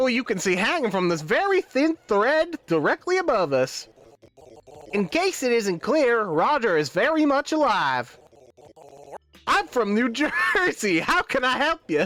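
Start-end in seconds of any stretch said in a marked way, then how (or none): 9.5-12.1 put-on American southern accent. Voicing the mascot Roger offering to help, southern accent for Roger. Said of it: "keep him with the southern accent".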